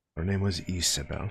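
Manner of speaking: voice dropped down low and hushed. Asked her name, he answers about the woman in his tragic tale, lowered voice. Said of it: "He like lowers his voice when he says this".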